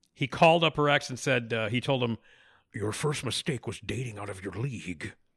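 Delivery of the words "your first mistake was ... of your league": low, soft, rumbling growl. Retelling an actor's in-character phone call to a woman's ex, Liam Neeson growl. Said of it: "he growled into the phone".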